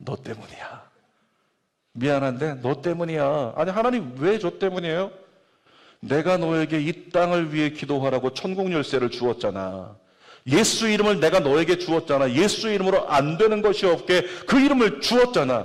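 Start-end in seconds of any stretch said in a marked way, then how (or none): 0.0-0.9 hushed, soft, intimate murmur close up. Speaker tells listeners what the Lord answers up close, in a quiet whisper. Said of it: "조용히 가까이 와서 귓속말로".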